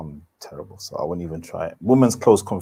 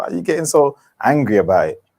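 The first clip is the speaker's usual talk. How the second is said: ordinary talk, nothing marked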